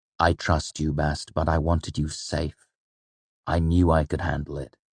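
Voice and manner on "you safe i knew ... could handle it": ordinary delivery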